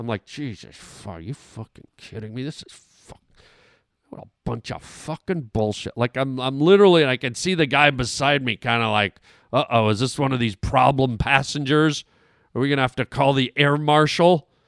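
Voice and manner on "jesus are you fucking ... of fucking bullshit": muttered swearing under the breath, much quieter. Retelling sitting in his plane seat after a lightning strike delay, retelling muttered swearing. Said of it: "Now I'm starting to swear under my breath".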